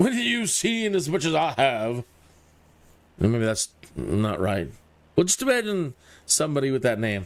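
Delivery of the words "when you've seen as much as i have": put-on posh, upper-class accent. Rereading a character's line, in a posh voice. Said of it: "I should give more more posh voice".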